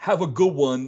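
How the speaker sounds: put-on accurate South Philadelphia local accent. Retelling a spouse's parting words to an older couple: imitating a south philly accent. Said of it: "exactly the way that they say it down here".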